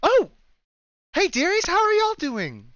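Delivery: beaming, very high, loud, swooping sing-song. Voicing a character greeting arriving adventurers: very happy Anya voice. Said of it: "as you'll see a very happy Anya".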